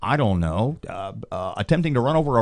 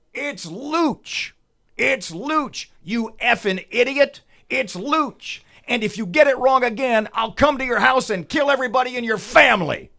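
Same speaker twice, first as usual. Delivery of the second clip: mock furious shriek, very high and shrill; 12 semitones higher than usual. Retelling how a man screamed at him, imitating a man screaming. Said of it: "He screams the following".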